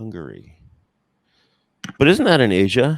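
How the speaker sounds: booming, loud, deadpan, swooping straight-faced delivery. Speaker retells answering a guy in his best deadpan, retelling a deadpan reply. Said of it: "in my best like deadpan".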